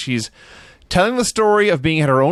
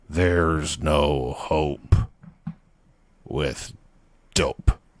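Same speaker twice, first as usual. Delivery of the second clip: very deep, very low, very slow, drawn-out wrestler voice; 11 semitones lower, 6 dB quieter than usual. Retelling what the Undertaker says to a young girl: 1993 Undertaker voice. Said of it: "in the nineteen ninety-three Undertaker voice".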